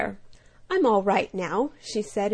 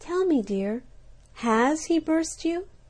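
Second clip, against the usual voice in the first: tender, high, gentle, caring voice; 7 semitones higher than usual. Narrator reads a butterfly kneeling beside a spider, speaking tenderly. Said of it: "said tenderly".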